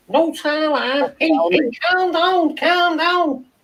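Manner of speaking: very high-pitched Liverpool Scouse accent. Saying a phrase a viewer suggested: Scouse accent. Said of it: "in a Scouse accent".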